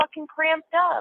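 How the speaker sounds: put-on screaming. Retelling screaming at the nurses at the hospital: retelling own screaming. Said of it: "I started screaming at them".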